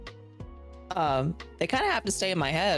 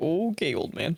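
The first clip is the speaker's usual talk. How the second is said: quiet muttering under the breath. Voicing a character answering another character: muttered under her breath. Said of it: "kinda under her breath be like".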